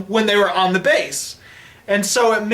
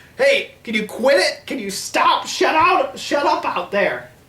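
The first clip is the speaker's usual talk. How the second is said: play-acted mild cartoonish yell, high-pitched; 5 semitones higher than usual. Retelling a film scene where the CIA director yells at a soldier: imitating someone yelling.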